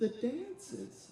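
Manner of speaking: very high-pitched voice. Retelling answering a teacher's question in eighth grade, in a very high-pitched voice. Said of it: "I said in a very high-pitched voice".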